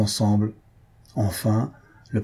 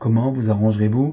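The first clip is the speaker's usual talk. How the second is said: ordinary delivery, nothing marked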